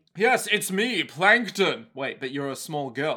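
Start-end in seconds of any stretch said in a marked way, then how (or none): 0.2-1.9 slow, drawn-out, grand and proud cartoon voice. Repeating the Plankton line joked about just before: grandiose Plankton voice. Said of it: "the grandiose Plankton".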